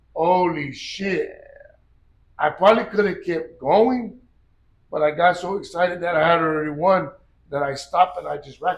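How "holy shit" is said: stunned, mind-blown amazement. Retelling hitting a seventh bench rep: imitating own mind-blown reaction. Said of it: "I was just fucking mind blown".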